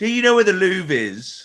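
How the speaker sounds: put-on British English accent. Speaker imagining English-accented people asking at a rural gas station, imitating an English accent. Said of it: "America with English accents".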